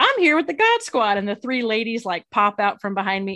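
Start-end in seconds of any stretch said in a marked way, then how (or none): 0.0-1.2 bright, chirpy, high, cheery voice. Retelling arriving at a staring couple's house with three ladies: retelling a cheery greeting. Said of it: "I'm standing there with this big old smile on my face".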